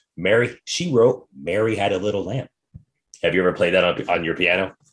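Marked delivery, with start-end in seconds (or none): none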